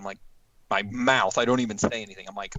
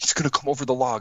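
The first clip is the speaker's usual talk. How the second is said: put-on hushed whisper, slightly higher pitch; 3 semitones higher than usual. Retelling how his cousin whispered as it trotted toward them, retelling a whisper. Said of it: "he whispers".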